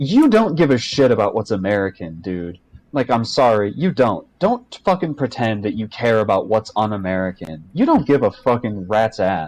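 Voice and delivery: angry, heated, mad ranting outburst. Reacting to a paused clip of what a man said; angry ranting. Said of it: "but I'm too mad".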